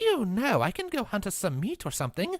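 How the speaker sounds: put-on British accent with big, swooping pitch swings. Voicing Cinder in a scene, the speaker gives Cinder a British accent. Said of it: "Why am I giving Cinder a British accent?".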